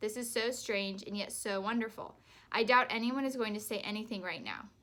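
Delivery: ordinary delivery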